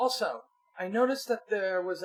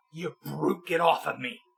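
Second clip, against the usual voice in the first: snarled, rough-edged delivery; 2 semitones lower than usual. A game master voicing a pinned woman, snarling at the player's character. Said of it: "She kind of snarls".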